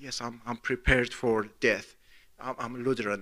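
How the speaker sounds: very quiet, hushed, slow and drawn-out. Retelling a man next to you at a checkout answering you, imitating a slow, quiet reply. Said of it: "he's like very slowly".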